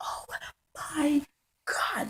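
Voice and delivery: put-on shrill, very high screaming. A student describing how they act at lunch, acting out a scream. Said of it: "Like I'm screaming".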